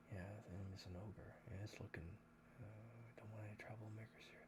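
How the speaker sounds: muttering behind covered mouth. Voicing guards who cover their mouths and talk: guards muttering behind covered mouths. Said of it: "they kinda cover their mouths and talk like this".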